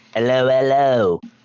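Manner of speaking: put-on English accent. Repeating how someone always says hello in the chat, imitating his english accent. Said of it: "I'm just repeating how he says hello".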